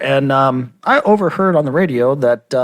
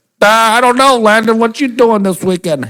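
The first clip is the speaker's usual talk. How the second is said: dopey, dim-sounding voice, pitched up; 8 semitones higher, 3 dB louder than usual. Acting out Brian's answer to Landon while Brian listens, use an Al Pacino-like voice. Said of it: "Why did I sound like Al Pacino when you just gave me that voice?".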